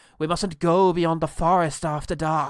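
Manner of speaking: put-on very loud, authoritative, commanding Irish accent. Describing a character's entrance, doing her lines in a put-on commanding irish accent. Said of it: "this commanding voice and her Irish accent".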